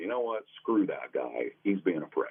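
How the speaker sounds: plain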